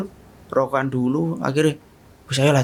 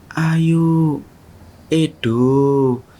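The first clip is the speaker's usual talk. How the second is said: put-on very soft female voice; 2 semitones higher, 4 dB louder than usual. Retelling a voice calling names at night: imitating a very soft female voice calling. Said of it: "Itu tuh halus banget".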